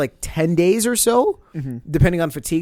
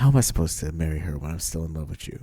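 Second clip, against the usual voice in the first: very deep, low, hushed and soft voice; 13 semitones lower, 6 dB quieter than usual. Retelling what he said to her, the speaker quotes him imitating his soft voice. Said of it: "he hit her with the soft voice and said".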